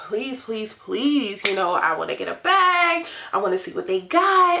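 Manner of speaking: mock insistent, earnest, repeated pleading. The speaker's friend wants to climb a building with a broken elevator; imitating a friend pleading. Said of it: "my friend is like really pleading".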